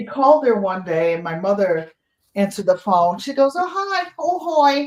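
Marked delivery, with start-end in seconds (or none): 3.5-4.9 put-on very high, slow Boston accent. Retelling a phone call, speaker imitates a caller greeting his mother in a boston accent. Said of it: "with her Boston accent".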